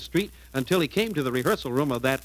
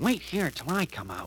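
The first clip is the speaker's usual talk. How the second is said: soft, hushed half-whisper; 6 dB quieter than usual. Danny tells Sylvester to wait before hurrying into the office, half-whispering. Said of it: "Danny whispered to Sylvester".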